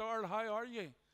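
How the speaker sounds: loud shouted hollering. Retelling a greeting shouted across a store: imitating someone shouting a greeting. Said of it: "he shouts over to me".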